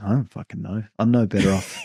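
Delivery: totally unbothered, offhand, breezy, nonchalant alien voice. Acting out the alien answering a question: put-on nonchalant alien voice. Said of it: "totally nonchalant".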